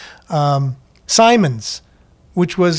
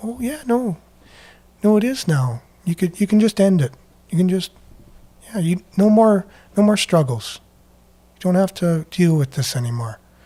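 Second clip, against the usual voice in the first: put-on soft, gentle, nice, caring tone. Acting out what they say to you, in a mock soft, caring voice. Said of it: "the nice tone, the soft voice, the caring voice".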